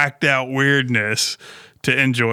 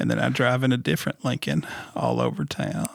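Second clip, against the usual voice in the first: put-on Southern politician voice, quieter; 6 dB quieter than usual. Mocking a car commercial: Bill Clinton voice. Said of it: "I started to sound like Bill Clinton there".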